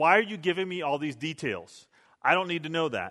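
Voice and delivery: plain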